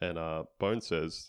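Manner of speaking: usual speaking voice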